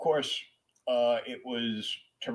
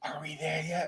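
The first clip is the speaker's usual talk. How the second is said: put-on high, loud child stage whisper; 5 semitones higher, 4 dB quieter than usual. Retelling a childhood bus trip: imitating a loud kid whisper. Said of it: "loudly kid whispering".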